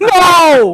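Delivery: desperate screaming, high and loud. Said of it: "on his knees screaming".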